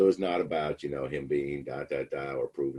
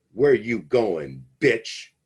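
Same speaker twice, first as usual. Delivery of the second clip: very loud, pitched-up, shouted yell; 7 semitones higher, 10 dB louder than usual. Retelling a courtroom scene where the defendant turns on the prosecutor: imitating someone yelling. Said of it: "And he starts yelling".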